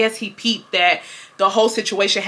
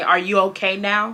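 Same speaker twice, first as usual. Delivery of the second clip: mock patronizing, condescending teacher's tone, talking down. Retelling what the teacher asked the next morning: imitating a condescending tone. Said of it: "he said it in a very condescending manner".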